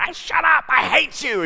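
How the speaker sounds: put-on high, shouted old-man outburst.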